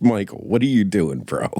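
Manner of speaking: ordinary talk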